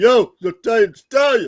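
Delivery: very loud, booming, high, belted tough-guy voice. Guessing aloud how they might talk, do a Sylvester Stallone impression. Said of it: "They might talk like Sylvester Stallone".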